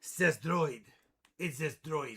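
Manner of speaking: low, put-on German accent, laid on. Reading a winner's name aloud, in a german voice. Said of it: "Why am I saying it in a German voice?".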